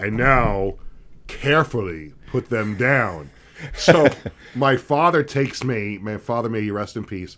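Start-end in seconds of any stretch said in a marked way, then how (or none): 0.0-3.3 put-on public-address announcer voice. Retelling a bat day photo op, speaking in Bob Shepard voice. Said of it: "in his Bob Shepard voice".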